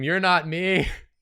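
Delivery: loud, high crying scream.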